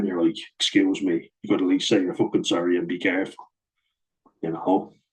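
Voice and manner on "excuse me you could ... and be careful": ordinary talk, nothing marked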